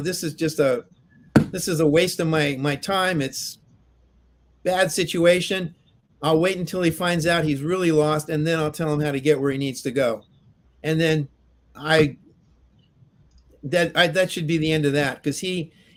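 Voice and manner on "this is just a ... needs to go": usual speaking voice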